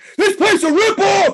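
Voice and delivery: imitated angry screaming. Retelling losing it at a store checkout: retelling a scream. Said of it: "I just start screaming".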